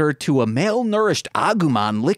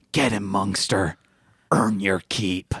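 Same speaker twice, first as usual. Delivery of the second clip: hushed, soft whisper, much lower pitch; 7 semitones lower, 4 dB quieter than usual. Turning back toward the scene before entering a building, urging someone on in a hushed whisper. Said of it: "say in a hush whisper".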